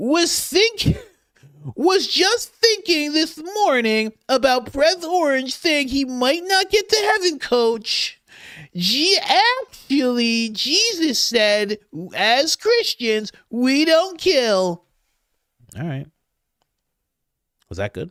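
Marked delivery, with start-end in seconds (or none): 0.0-14.8 very high, slow, put-on nerdy voice. Streamer reads a viewer's chat message aloud on request, in the nerd voice. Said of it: "so you want me to read this in the nerd voice?".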